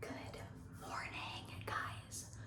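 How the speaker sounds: soft unvoiced whisper. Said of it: "I'm being quiet because".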